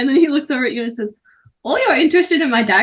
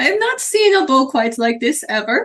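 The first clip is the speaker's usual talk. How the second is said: character voice in a put-on Swedish accent. Voicing a character buying a bow for 400 gold, swedish accent. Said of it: "this is Swedish".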